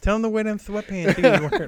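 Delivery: soft, high mock voice with lisp. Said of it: "Why did I sound like [name]?".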